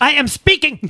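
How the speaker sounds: very high, sharp, snapping delivery. Imagining an argument with a judge: imitating Judge Judy snapping. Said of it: "She's like".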